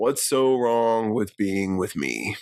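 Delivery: creepy, sinister, threatening, menacing tone. Retelling a show scene where a character speaks: sinister, imitating Bear. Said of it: "he says something really sinister".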